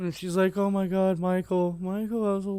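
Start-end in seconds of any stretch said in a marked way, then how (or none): 0.6-2.2 acted sobbing, crying, tearful pleading tone. Retelling a mom getting out of the car in tears: imitating someone crying. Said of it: "so she's crying".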